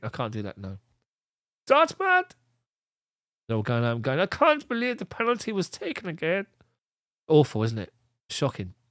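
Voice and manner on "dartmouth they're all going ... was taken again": bad German accent drifting Welsh, swooping pitch. A commentator tries the German accent impression again: failed German accent, sounds Welsh. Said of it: "Sounds like I'm Welsh".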